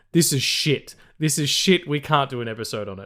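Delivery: normal talking voice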